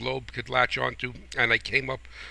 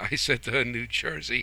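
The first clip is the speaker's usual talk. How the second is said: plain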